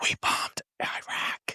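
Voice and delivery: hushed whisper under the breath. Imagining a husband telling news in the shower: imitating a husband whispering.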